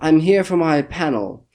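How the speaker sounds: slow, stagey, grandly dramatic delivery. Retelling how a man walked past the line to the counter, in a theatrical voice. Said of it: "in that kind of theatrical voice".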